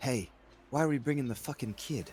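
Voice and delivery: put-on whisper, acted character voice. Voicing Sandara leaning up to a player: whispering as Sandara. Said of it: "on her tippy toes and whispers to you".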